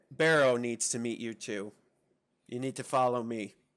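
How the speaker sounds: put-on tough manner. Voicing a nervous young contact meeting the group: acting real tough. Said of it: "I'm acting real tough".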